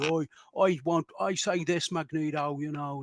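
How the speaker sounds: bad, laid-on Irish accent, high-pitched and slow. Recapping a council-table exchange, quoting Banshee in a bad Irish accent. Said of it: "all this really bad Irish accent".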